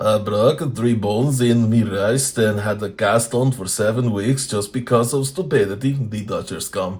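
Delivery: put-on Russian accent. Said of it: "Why does Squisgar sound Russian all of a sudden?".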